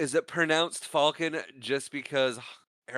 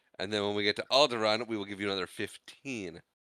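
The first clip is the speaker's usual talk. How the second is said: plain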